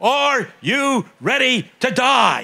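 put-on preacher yell, very slow, every word stretched. Retelling a preacher yelling at him at twelve: imitating a preacher yelling. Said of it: "he's yelling".

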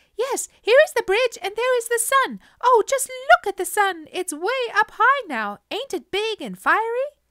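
put-on very high, very loud, shrill piping baby voice. A narrator reading a story where a baby voice suddenly pipes up: shrill baby voice. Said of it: "a baby voice piped shrilly".

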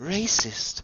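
hushed, secretive, conspiratorial whisper. A woman leans in to a small child, speaking in a conspiratorial whisper. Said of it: "she leans in conspiratorially and whispers down to you".

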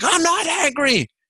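very high, dismissive, brushing-off snap. Retelling answering a principal's question: imitating own dismissive snap. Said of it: "me flipping off like".

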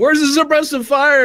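drill sergeant yell. Playing the sergeant demanding suppressive fire: sergeant shouting. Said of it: "the sergeant shouting".

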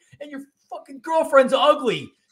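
very high, shrill, loud, wild yell. Recounting a fight, the other man yells at them: imitating a man yelling. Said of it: "he's yelling".

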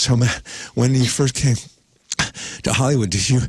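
out-of-breath speech. Retelling a hiking interview with a friend: imitating himself out of breath. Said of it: "if we're both so out of breath".

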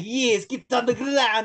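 bad, exaggerated, cartoonish fake Russian accent, slow. Retelling how an actor delivered a line: imitating a cartoonish bad russian accent. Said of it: "reminded me of a cartoon character".

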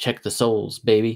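plain

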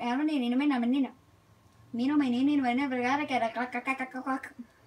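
put-on, Spanish-tinged Mexican accent. In voice chat, mimicking the other player the speaker didn't mute: mock Mexican accent. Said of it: "My impression of Mexican or Chinese or whatever".

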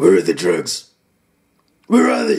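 deep, gruff growl.

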